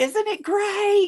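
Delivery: play-acted very high, bright, excited cheer. Speaker retelling making thunder seem fun so she wouldn't be afraid, mock-cheerful excited tone. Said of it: "trying to make it like".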